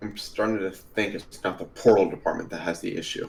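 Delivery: fast, hushed, muttered aside. Travis, as the slow spell is dispelled, mutters under his breath. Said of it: "Travis mutters under his breath".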